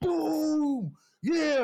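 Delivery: put-on wild Texan accent, very high and loud. Retelling a player running down the field after winning the game, crazy Texan accent. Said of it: "In a crazy Texan accent".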